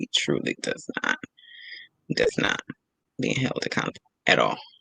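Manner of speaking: low, soft hushed aside.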